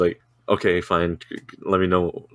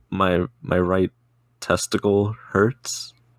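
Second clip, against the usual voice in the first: imitated whisper. Retelling leaning over a hospital front desk: retelling a whisper. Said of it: "I lean forward in the desk and I whisper".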